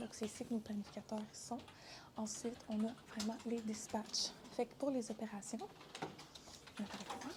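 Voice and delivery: hushed half-whisper.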